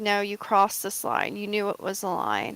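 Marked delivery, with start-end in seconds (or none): none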